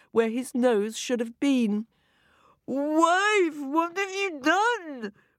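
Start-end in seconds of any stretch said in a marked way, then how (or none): 2.7-5.1 high, drawn-out bellowing roar, "wife" stretched long. A husband turns on his wife after a sausage appears on his face, roaring. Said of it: "Roared Mr. Smith".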